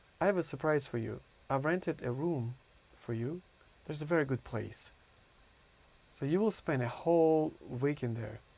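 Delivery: plain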